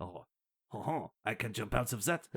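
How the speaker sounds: clumsy, bad, put-on French accent. Telling a hot air balloon story, quoting a French guy in a bad French accent. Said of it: "You thought my English accent was bad".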